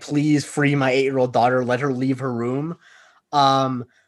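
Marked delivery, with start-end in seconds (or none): none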